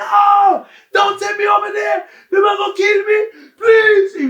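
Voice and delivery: very loud, shrill, very high, terrified pleading scream. The speaker acts out a man pleading as a warder drags him, imitating him screaming. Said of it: "This guy was screaming".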